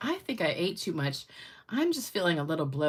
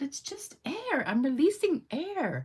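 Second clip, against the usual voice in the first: very high, put-on British accent; 9 semitones higher than usual. Retelling a woman denying to a guy that she farted: British accent. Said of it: "She's doing it in a British accent".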